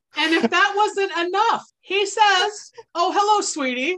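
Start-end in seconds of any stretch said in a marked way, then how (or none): 3.0-4.0 small creature character voice. Narrating a story, a character at the front door greets a visitor, in Turkey voice. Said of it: "In turkey voice".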